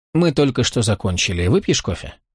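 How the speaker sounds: ordinary delivery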